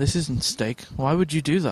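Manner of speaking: quietly, firmly spoken put-on voice. Retelling a restaurant scene, served salad instead of steak: quiet, firm Ron Swanson voice. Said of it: "he's very sort of quietly, firmly spoken".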